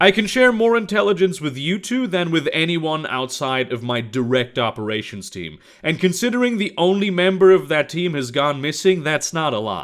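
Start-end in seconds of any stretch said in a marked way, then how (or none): none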